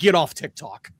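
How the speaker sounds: put-on impatient, fed-up, out-of-patience tone. Retelling a reply to a repetitive kid: retelling an impatient retort. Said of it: "I just kinda lost my patience".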